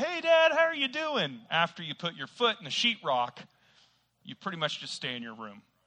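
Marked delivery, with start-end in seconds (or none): 0.0-1.4 high, loud, cheery tone. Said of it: "usually be like".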